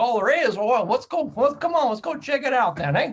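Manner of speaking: full-on put-on Southern accent, loud and high. Retelling what a man said to visitors in his driveway, full Southern accent. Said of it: "he just put on his full full Southern accent".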